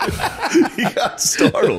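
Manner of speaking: high, slow, laughing teasing tone.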